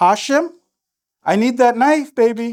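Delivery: earnest, firm, serious tone with no joking. Demonstrating the next step in asking for the knife back: serious. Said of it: "So now I'm serious".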